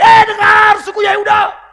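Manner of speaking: loud, ringing, very high-pitched call-out voice. Retelling how Isaiah spoke out to the tribe of Judah: loud. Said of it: "Dengan lantang dia bilang".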